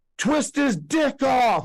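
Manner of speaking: put-on very high, loud yell. Retelling a young man in the front row yelling out: imitating a loud yell. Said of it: "he yells loud as he could".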